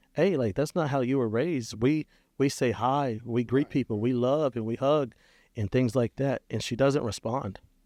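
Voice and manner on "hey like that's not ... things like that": normal talking voice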